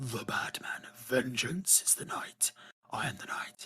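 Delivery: whisper done badly on purpose. Introducing the main topic, the speaker delivers a terrible Batman impression. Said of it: "my terrible Batman impression".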